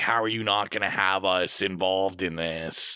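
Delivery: ordinary talk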